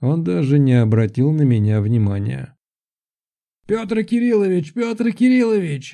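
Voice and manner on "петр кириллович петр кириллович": almost a shout, pitched very high. A guard running up the steps calls out a name, almost shouting. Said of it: "Почти кричал охранник".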